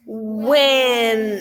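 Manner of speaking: stretched-out word. Sounding out a word to hear its first sound, stretched out like a turtle. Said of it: "This time I'm going to use my arm".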